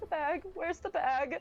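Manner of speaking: shaky, scared, quavering voice. The captain calls down from the deck above: shaky, terrified little-girl voice. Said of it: "Very shaky, very terrified, almost little girl sounding".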